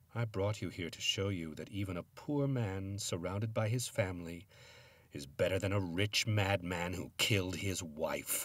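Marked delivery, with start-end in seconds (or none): none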